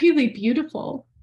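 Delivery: high, choked-up tearful voice, about to cry. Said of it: "sorry, I'm gonna cry".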